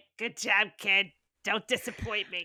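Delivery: put-on old-timer cat voice. Suggesting a greeting card, speaker voices the old cat on it: old cat voice. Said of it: "create a card with the old cat".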